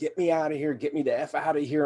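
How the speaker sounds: frantic, desperate cry. Recalling a wave of panic inside an MRI machine, retelling a scream. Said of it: "I'm screaming".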